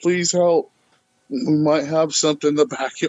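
fast, frantic, panicked pleading voice. Speaker recalls phoning Bigfoot researchers, reenacting a frantic panic voice. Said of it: "in a frantic panic voice".

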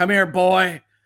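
put-on loud, booming, grizzled old father voice. Joking about a gloomy Sonic sequel, voicing Sonic: grizzled old father Sonic voice. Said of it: "he's gonna be an old grizzled father".

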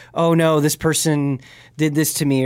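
ordinary talk

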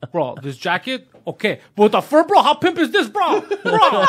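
high mock shouting, rising with each repetition. Retelling how a friend tried on fur coats in a shop: imitating a friend yelling. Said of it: "And he keeps yelling".

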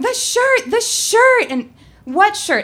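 very high-pitched, shrill, loud yelling outburst. Recounting running out to confront him, the speaker re-enacts their own yelling. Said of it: "I start yelling".

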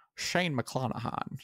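whispered, breathy put-on voice. Saying a pitcher's name when asked to: Sean Connery voice. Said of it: "can you do Shane McClanahan in the, uh, Sean Connery voice?".

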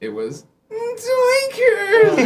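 high, loud, drawn-out slap-happy yell.

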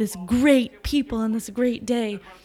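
put-on booming, loud announcer voice. Speaker imitates a TV personality speaking at a Victory Day event, imitating a booming voice. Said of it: "victory day really boomingly".

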